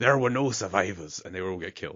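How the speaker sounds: loud, imperfect attempt at a Scottish accent. Quoting a character while retelling the plot: not quite right Scottish accent. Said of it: "That's not the right Scottish accent".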